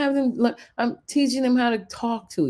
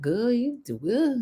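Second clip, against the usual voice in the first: put-on twangy southern drawl. Showing how people down there talk: imitating a Southern twang. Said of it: "down there they talk more like this".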